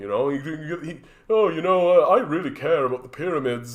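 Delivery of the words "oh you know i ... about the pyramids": mocking, put-on dumb podcaster voice. Mocking a podcast host you call an idiot, show how he talks now: mocking impression of a podcaster. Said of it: "he literally he talks like this now".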